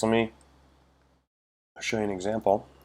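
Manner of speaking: speaking with hiccups. Showing viewers an example while the speaker has the hiccups. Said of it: "I got the hiccups there for a sec".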